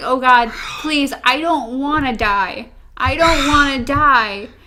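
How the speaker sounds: put-on tearful pleading. Retelling a scene where a character begs for his life: imitating crying and begging. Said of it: "he starts crying".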